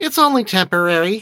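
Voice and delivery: defensive, very high. Narrator reads Beth answering Lowell's eyes sweeping the house, defensively. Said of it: "she said defensively".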